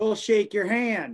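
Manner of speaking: playful, jokey, comic Southern accent. Taking turns with others welcoming someone who came, in a funny Southern voice. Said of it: "the funniest uh, Southern voice we can".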